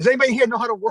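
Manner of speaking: put-on high yell. Retelling yelling at people in the crowd: imitating own past yelling. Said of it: "I'm yelling to people in the crowd".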